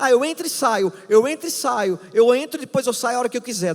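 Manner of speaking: put-on high, fast, carefree boastful teen voice.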